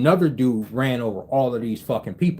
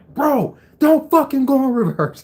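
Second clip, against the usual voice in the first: mock angry, heated, pitched-up shout; 13 semitones higher, 4 dB louder than usual. Telling how a car reversed at him in traffic, retelling a heated yell. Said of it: "but I was so heated".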